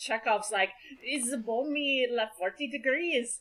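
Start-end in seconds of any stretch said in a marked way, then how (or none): 1.0-3.4 put-on accent drifting toward Italian, higher and quieter. Imitating a character from the episode being discussed: Chekhov accent. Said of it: "I don't know where that accent was".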